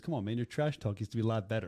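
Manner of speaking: put-on calm delivery. Retelling how one man answered another's trash talk, mock-calm. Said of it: "Dustin just calmly goes".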